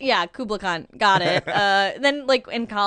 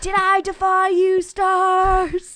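slow, very high, drawn-out howling scream; 10 semitones higher, 3 dB louder than usual.

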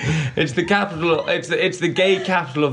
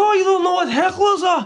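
put-on Scottish accent, pitched very high; 3 dB louder than usual. Retelling what people in the front row said, imitating a scottish accent. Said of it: "In their Scottish accent".

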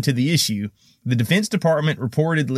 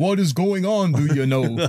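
put-on Vermont accent attempted by a Southern-accented speaker; 3 semitones higher than usual. Reading a news quote after being asked to do a Bernie: Bernie Sanders impression. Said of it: "a Southerner trying to do a Vermont Bernie Sanders".

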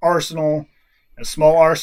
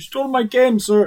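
put-on cartoonish character voice, higher pitched; 8 semitones higher than usual. Role-player speaking in character to Grimsley, in a cartoon character voice. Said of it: "You sound like a boo from".

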